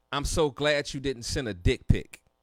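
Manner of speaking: ordinary delivery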